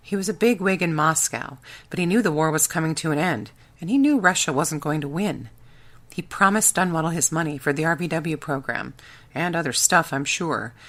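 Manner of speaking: usual speaking voice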